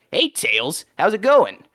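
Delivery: put-on high, swooping pitch in an older-sounding voice. Voice performer describing how the character's voice changed: older-sounding Sonic voice. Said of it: "make him sound older".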